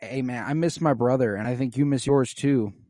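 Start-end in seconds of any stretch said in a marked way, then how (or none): none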